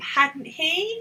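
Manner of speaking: voice goes up on "he". Intonation lesson, repeating a tag question: rising pitch on he. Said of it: "Voice goes up".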